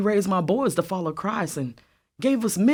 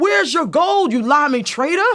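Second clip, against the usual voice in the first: mock furious, high, angry crowd-like yelling; 7 semitones higher, 6 dB louder than usual. Retelling what the Tories shouted at Mister Hugh: imitating men shouting. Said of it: "they shouted".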